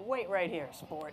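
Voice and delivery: ordinary talk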